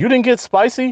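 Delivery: play-acted shrill, loud, high-pitched blurted outburst. Retelling their own past words to a woman, retelling own loud outburst. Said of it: "and I said that loud".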